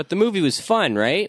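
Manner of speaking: sarcastic tone, pitch up on "movie". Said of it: "I'm just being sarcastic".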